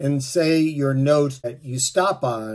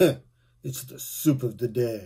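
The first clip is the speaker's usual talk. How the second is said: soft, disdainful, snooty sneer. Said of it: "looks down at him disdainfully and goes".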